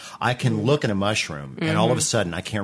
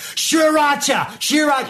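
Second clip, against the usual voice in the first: very shrill, very high, exasperated, frustrated screaming; 8 dB louder than usual. Acting out a frustrated woman yelling at the speaker in the booth, retelling a scream. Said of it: "She would be screaming".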